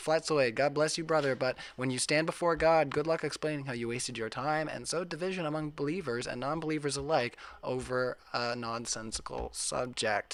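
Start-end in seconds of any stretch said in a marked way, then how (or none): none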